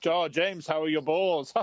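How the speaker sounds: put-on British accent. Imagining characters teasing someone throughout a film series, doing a British impression. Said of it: "That's my British impression".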